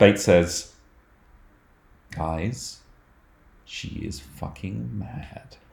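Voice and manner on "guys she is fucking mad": very soft, very drawn-out, slow, hushed whisper. In a tabletop game, a character warns the group, whispering. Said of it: "she whispers".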